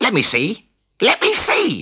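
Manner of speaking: squeaky voice. A tengu begs a man to let it look, squeaking. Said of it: "squeaked the Tengu".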